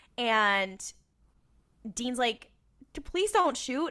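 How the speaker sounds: ordinary delivery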